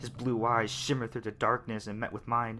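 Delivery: ordinary delivery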